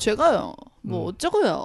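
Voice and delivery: macho tough-guy voice, swooping endings stretched out on purpose. Describing how a kid talks, imitating his macho voice with drawn-out endings. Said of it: "그 끝에를 되게 멋있게 일부러 빼는".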